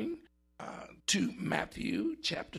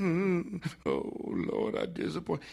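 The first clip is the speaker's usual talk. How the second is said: soft moan. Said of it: "He didn't utter just a little moaning".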